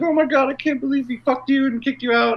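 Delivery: very high, weepy, sobbing, tearful voice. Retelling two friends consoling each other, imitating someone crying. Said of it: "They end up in each other's arms crying".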